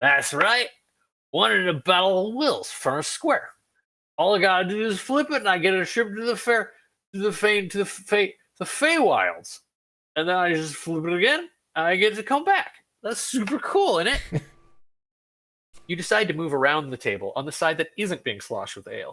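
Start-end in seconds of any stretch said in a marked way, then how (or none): 0.0-14.4 put-on high, boozy, boastful, rambling drunken voice. A game master voices a dwarf bragging to friends at a crowded table: drunk bragging dwarf. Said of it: "where you hear a drunk dwarf bragging to his friends. / where you hear a drunk dwarf bragging to his friends. He's got a flagon of ale in one hand, sending a spray in all directions as he gestures wil".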